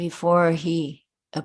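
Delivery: ordinary delivery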